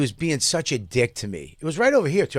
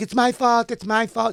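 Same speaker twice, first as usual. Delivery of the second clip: put-on elderly Italian woman's voice, pitched up; 9 semitones higher than usual. Retelling what an old Italian lady said: imitating an old Italian lady. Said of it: "an old Italian lady".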